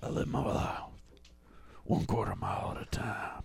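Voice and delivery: soft, low, hushed and breathy voice. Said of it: "You sound like if [name] played that role".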